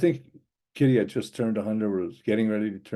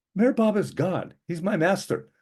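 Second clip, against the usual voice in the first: put-on very high, hot-tempered woman, Romanian accent, fiery outburst; 10 semitones higher than usual. Retelling a woman's reply after she cut him off: mock-fiery Romanian woman. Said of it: "She's Romanian, very fiery".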